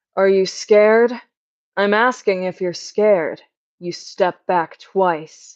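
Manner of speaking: tough, cool, unbothered, badass tone. Speaker replays a line they performed as a character: badass and cool. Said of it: "like really like badass and cool".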